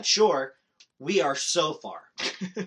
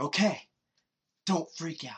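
hushed stage whisper, kept down; 5 dB quieter than usual. Retelling warning a friend on the paddleboard about a fin: imitating own half-whisper. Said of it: "so I'm whispering".

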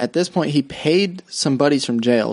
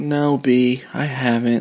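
put-on sad voice. Retelling the mom's reply to the abductor's question: imitating someone sad. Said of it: "like, all sad".

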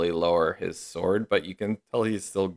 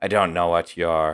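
put-on Irish accent; 5 dB louder than usual. Voicing the paladin captain after the fight: irish accent. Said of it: "it wasn't Irish before".

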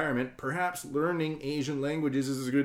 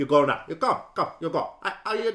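put-on accent from Southeast Asia; 3 semitones higher, 5 dB louder than usual. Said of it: "Southeast Asians sound like this".

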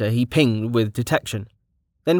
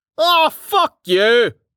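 very high, loud, laughing through the words; 13 semitones higher, 6 dB louder than usual. [name] answers Rain's deadpan jab, laughing.

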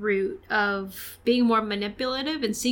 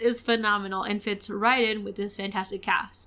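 ordinary delivery

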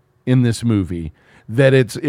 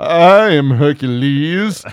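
cheap dubbed-film voice; 2 semitones higher, 4 dB louder than usual. Describing a film's dubbed voice: cheap Charlton Heston impression. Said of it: "a cheap Charlton Heston impression".

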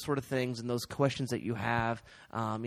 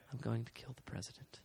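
very quiet, soft whisper, barely audible; 11 dB quieter than usual. Quoting a movie villain, doing a soft whisper: John Malkovich voice, soft whisper. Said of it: "I was doing my John Malkovich voice".

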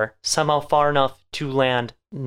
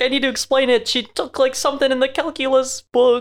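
put-on very high babyish yell; 11 semitones higher than usual. Retelling a movie scene where Light panics when caught: imitating Light yelling like a baby. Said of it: "starts yelling like a little baby".

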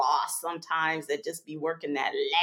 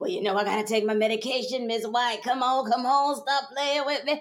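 deep, low, rasping raspy voice; 5 semitones higher than usual. Telling a work story, the speaker puts on a voice for a person pleading about medication. Imitating a deep raspy voice. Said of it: "deep raspy voice".

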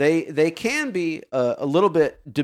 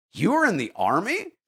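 put-on incredulous kid voice, much higher, faster; 3 semitones higher than usual. Speaker retelling a kid's question at a kids program, imitating an incredulous kid. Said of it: "Kind of looks at me fairly incredulous".

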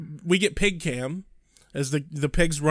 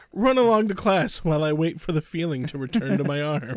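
usual speaking voice

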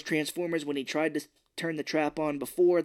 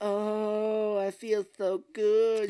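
mock very slow, high, blissed-out voice with long oh; 6 semitones higher than usual. Retelling the mom in the back of the car: imitating someone high on ecstasy. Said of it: "She's just on ecstasy".

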